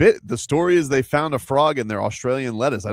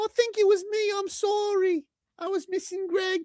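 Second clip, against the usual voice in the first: put-on soft, very high elderly English woman; 6 dB quieter than usual. Apologizing to the group, the speaker puts on an old English lady voice. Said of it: "Why are you talking like an old English lady?".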